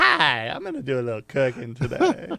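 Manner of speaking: playful, sing-song, put-on auntie character voice. Joking about a cooking segment, in a put-on auntie voice. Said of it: "I'm auntie".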